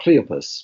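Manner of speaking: Cleopas with the first syllable Cle stressed. Following a booklet's pronunciation of the name: stress on cle in cleopas. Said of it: "accent on the first syllable".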